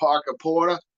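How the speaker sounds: Boston accent. Saying a name that is fun to say, in a Boston accent. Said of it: "especially in a Boston accent".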